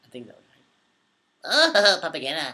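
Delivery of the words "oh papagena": put-on high cartoon creature voice. Answering a viewer who asks for it, doing a Minion impression. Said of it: "my voice can't go that high right now".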